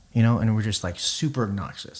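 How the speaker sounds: usual speaking voice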